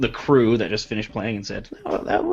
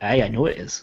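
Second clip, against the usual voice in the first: confidential stage-whisper tone. Barry leans in close so the rest of the crowd can't hear; hushed. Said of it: "so it's a little bit hushed".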